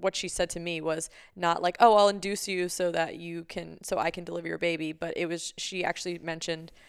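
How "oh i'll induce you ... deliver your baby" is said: ordinary talk, nothing marked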